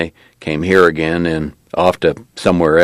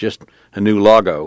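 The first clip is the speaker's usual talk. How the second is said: ordinary delivery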